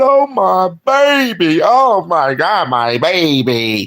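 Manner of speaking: very slow, weepy crying out. Telling the audience how they would cry if it happened to them: imitating someone crying. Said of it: "y'all be crying".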